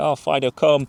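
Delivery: unbothered, lacklustre, half-hearted, bored calling. Acting out an owner calling the dog while staring at a phone: imitating a half-hearted recall. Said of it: "half-arsed, not really bothered".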